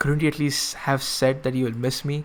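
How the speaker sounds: plain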